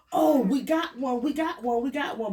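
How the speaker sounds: put-on tour guide voice, high, screamed repeatedly. Retelling a volcano escape, the speaker quotes the tour guide: retelling a tour guide's screaming. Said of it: "like screaming".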